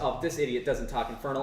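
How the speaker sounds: ordinary talk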